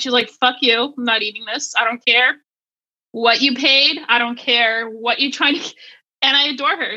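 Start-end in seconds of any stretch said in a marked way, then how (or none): 0.3-5.7 put-on mean, fussy voice. Voicing her refusing food that was paid for: imitating her being finicky and mean. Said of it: "how finicky and really sometimes mean you are".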